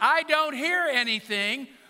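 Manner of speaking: very loud, slow, booming. Retelling a reply to the wife over a thumping noise: retelling saying it very loudly. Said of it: "I have to say it very loudly".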